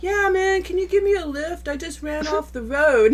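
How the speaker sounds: high, nonchalant tone, as if nothing happened.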